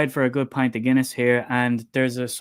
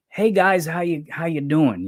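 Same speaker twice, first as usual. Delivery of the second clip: put-on twangy American accent; 4 semitones higher than usual. Speaker imitates a man who sounded American greeting them; American twang. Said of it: "like he had a twang".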